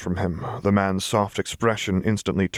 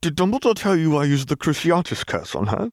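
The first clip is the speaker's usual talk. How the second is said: offended, affronted, pitched-up, shot straight back; 9 semitones higher than usual. Reading a character's retort to another who just scolded him, affronted. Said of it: "shot back, affronted".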